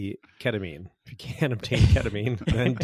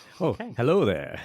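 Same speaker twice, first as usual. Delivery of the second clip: creepy, distinctive sci-fi film character voice. Greeting the listeners when introduced: Obi-Wan Kenobi voice. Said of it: "the Obi-Wan Kenobi".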